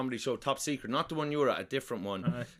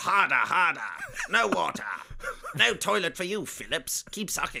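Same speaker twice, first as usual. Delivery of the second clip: put-on German accent, pitched up; 6 semitones higher than usual. Playing someone ordering Phillips around, in a put-on German-sounding accent. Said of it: "I thought that was a fucking German accent you were doing".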